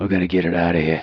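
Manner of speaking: put-on tough-guy voice with English accent. Acting out a bomb squad scene: Jason Statham voice. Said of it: "Jason Statham will be breathing out his neck like".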